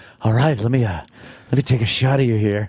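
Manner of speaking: put-on sleazy, pervy voice. Joking about a pervy photographer character: put-on pervy photographer voice. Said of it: "Thank you for, uh, doing that voice".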